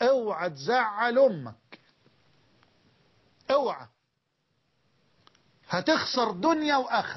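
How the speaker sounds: rural Egyptian fallahi country accent. Warning listeners not to upset their mother, in egyptian peasant dialect. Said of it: "بالفلاحي كده".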